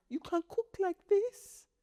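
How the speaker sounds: put-on weepy squeak of awe, very high, tearful. Retelling dad's reaction to the cooking: imitating dad tearfully amazed. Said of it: "every little thing makes him cry".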